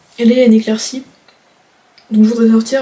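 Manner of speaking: talking with mouth full. Speaker waiting for her mom to finish remote work, talking with mouth full. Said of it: "mais j'ai la bouche pleine".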